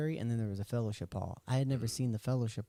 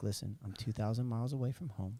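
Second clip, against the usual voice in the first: acted, on the verge of crying, almost in tears; 3 dB quieter than usual. Retelling answering a man about the hat, retelling being near tears. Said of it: "and almost in tears".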